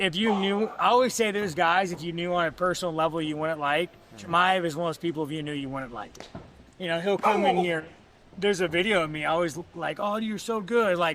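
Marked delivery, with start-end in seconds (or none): 10.0-11.0 put-on, ironic, clearly insincere tone. Retelling own past words from a video: imitating own sarcastic praise. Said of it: "I'm being sarcastic".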